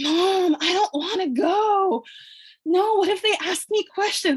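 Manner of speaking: play-acted panicked pleading, very high and drawn-out. Retelling refusing to go into a store for a return: imitating own past panic. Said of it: "I was panicking".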